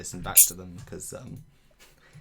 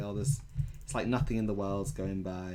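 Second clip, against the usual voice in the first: ordinary talk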